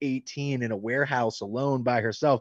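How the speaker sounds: ordinary talk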